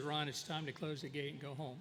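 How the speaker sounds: normal talking voice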